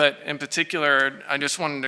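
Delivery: plain reading voice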